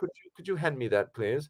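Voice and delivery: polite, soft, quick put-on British accent. Retelling joking around in the editing room, asking someone for something in a put-on British accent. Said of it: "we would occasionally do the British accent".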